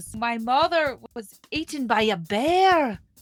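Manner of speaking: put-on Scottish accent with bear drawn out. During a Disney princess quiz, trying out Merida's Scottish accent. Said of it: "I can't think of how her Scottish accent goes".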